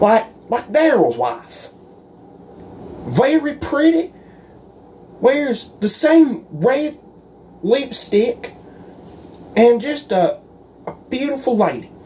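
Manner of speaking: sing-song sarcasm. A man speaks in front of Daryl, being sarcastic. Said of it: "I'm being sarcastic".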